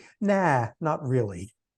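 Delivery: dry, snarky, sarcastic and dismissive tone. Summing up a research literature as quoted sentences: mock-quoting papers sarcastically, snarky. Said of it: "here's where I sound really sarcastic and snarky".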